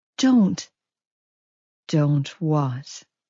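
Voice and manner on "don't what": low, purring voice. A man pushing the narrator against a wall asks back, purring. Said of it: "He purred".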